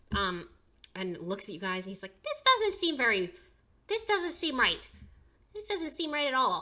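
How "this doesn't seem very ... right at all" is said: squeaky, sing-song, swooping goblin voice, very high. Narrating a scene, the storyteller voices a goblin addressing the group in a goblin voice. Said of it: "the other goblin says".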